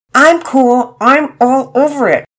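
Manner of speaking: strained, through clenched teeth. Narrator reading Penelope's reply to Pearson over the trash: through gritted teeth. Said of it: "Penelope said through gritted teeth".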